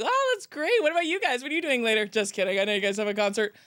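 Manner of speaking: put-on, overdone, doing-the-most chatty filler talk. Retelling filling the silence in front of quiet people: imitating own loud talking. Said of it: "I was just talking so loud".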